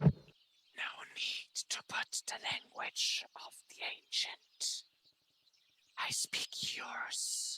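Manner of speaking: whispered voice, very low in volume. Voicing a hidden being speaking right into a character's ear: whispered voice. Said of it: "The whispered voice just coming right to your ear".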